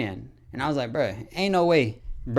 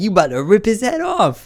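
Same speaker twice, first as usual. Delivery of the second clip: loud, screamed call-out; 6 semitones higher, 6 dB louder than usual. Retelling a story of a friend held by a cop: retelling a scream. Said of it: "We were screaming like".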